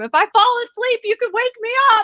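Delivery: very high, loud yell projected across room. Retelling a man who kept yelling to her across the room, imitating a yell. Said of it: "he kept yelling across the room".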